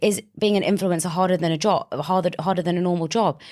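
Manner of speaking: usual speaking voice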